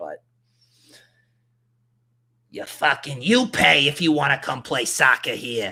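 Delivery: loud, put-on Boston Massachusetts accent. Acting out the town of Foxborough talking to World Cup visitors, in a masshole accent. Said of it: "my my masshole accent".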